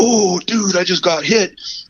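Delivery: mock thrilled, excited, high and drawn-out exclaiming. Mimicking an angler looking back at the camera, mocking excited angler. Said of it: "at the camera and you go".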